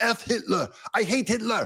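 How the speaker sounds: slow, drawn-out, pleading, fake soldier voice. Retelling a movie scene of a captured soldier pleading: German Nazi from Saving Private Ryan. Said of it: "They sound like the German Nazi in Saving Private Ryan".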